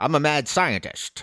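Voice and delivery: put-on slow, drawn-out, old-timey 1920s-style voice. Describing a movie character's mad-scientist side, in a 1920s voice. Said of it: "I just did my 20s voice".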